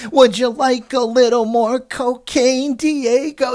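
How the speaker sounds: ridiculous, exaggerated put-on New York accent, drawn out. Mocking how an actress fakes an accent in a show, quoting a line in it; ridiculous New York accent. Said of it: "ridiculous, horrible, like, New York accent".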